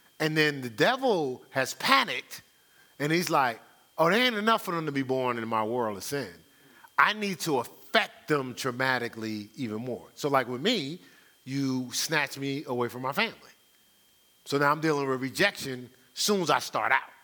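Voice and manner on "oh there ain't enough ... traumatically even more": usual speaking voice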